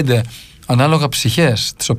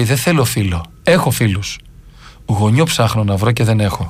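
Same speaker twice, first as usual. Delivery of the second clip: ordinary talk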